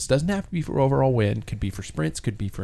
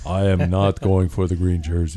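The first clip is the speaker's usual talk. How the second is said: exaggerated, bass-heavy, put-on very deep voice; 5 semitones lower, 4 dB louder than usual. Imitating someone said to have a really deep voice, imitating his super deep voice. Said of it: "he has a really deep voice. ... follow my voice".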